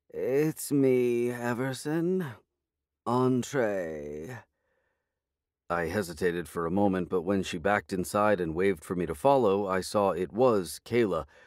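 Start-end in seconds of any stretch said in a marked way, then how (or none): 0.2-4.4 very slow, croaky, just-woken sleepy voice. Kayla answers her apartment door to the narrator, croaky with sleep. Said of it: "In a voice croaky with sleep".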